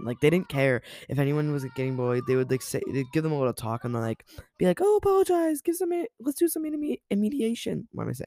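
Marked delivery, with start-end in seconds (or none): 5.6-7.9 very high, slow voice crack. A podcaster recounting how their school handled things, voice cracking. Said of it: "My voice cracked".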